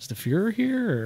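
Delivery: put-on quiet delivery. Retelling own question while looking at an old car: imitating own quiet remark. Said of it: "I said it very quietly".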